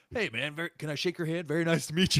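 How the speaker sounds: high, loud, awestruck, starstruck gushing. Retelling how a guard greeted a killer after the credits: imitating a starstruck fan. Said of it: "he's like".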